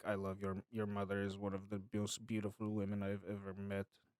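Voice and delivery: low, quiet, bone-dry deadpan delivery. Describing a comedy skit, imitating its deadpan delivery: Nick Kroll deadpan impression. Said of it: "He's just deadpan".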